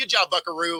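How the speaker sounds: mock condescending, patronizing fatherly voice. Talking about a commercial, a speaker imitates a condescending dad. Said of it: "it's the condescending dad that's like".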